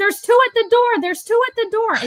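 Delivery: mock very high, shrill calling out. Retelling how an old man called to a hostess: imitating someone yelling. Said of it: "he's yelling to her".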